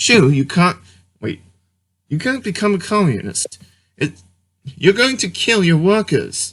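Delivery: put-on English accent, slightly high. Trying the accent too, quoting the Shoe on Head reaction: Sargon of Akkad English accent. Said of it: "I gotta practice my English accent".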